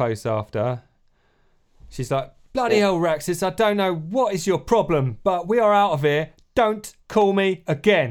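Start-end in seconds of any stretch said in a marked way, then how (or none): 2.5-8.1 put-on loud East End London accent throughout. Speaker retelling a character's parting words to Raxus, in Gron's East End London accent. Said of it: "That was her accent, was it?".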